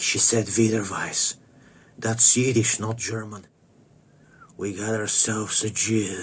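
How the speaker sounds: whispered speech. Retelling how a man whispered to the guy next to him, retelling a whisper. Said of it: "he whispers to his to the guy next to him like".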